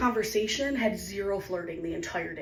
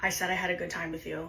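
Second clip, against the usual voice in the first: acted, completely deadpan, serious, expressionless delivery; 3 semitones lower than usual. Retelling a man's answer to the speaker's question, imitating a deadpan, serious reply. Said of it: "completely deadpan and serious".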